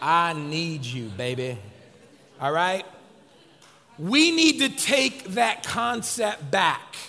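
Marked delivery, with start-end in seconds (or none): 0.0-1.6 saucy, playful, flirtatious delivery. Showing a congregation how to tell a spouse the line: saucy. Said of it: "definitely put some sauce on it then".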